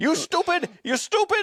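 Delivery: put-on Indian accent, pitched very high and shrill. Retelling how they reacted after he clicked the wrong button; Pakistani/Indian accent. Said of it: "Your uh your Pakistani uh slash Indian accent's pretty damn good".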